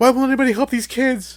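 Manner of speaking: mock shrill, frantic cry, very high and very loud. Retelling how a wife believed the movie was real: imitating someone saying it frantically. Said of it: "she starts frantically saying".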